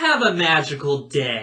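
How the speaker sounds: snide, sarcastic sing-song, very slowly drawn out. Showing the rude version of the farewell: snarky emphasis. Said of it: "When they put that little emphasis on it".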